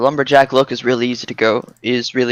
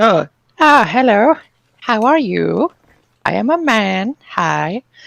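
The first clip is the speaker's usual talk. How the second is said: very high, slow, painfully awkward; 10 semitones higher than usual. Retelling a greeting from a tiny little guy: imitating someone awkward. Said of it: "Just being completely awkward".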